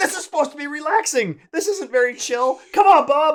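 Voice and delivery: play-acted, very high-pitched, stressed yelling. Retelling a board game where Bob Ross kept winning: imitating own past yelling. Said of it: "yelling at Bob".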